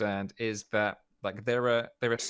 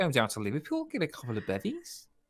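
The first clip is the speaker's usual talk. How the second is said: put-on Scouse Liverpool accent; 3 semitones higher than usual. Showing another speaker what a Scouser sounds like: put-on Scouse accent. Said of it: "a Scouser sounds like this".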